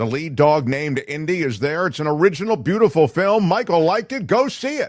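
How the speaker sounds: shouting. Speaker recommends a film that is in theaters, yelling. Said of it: "Why are you yelling?".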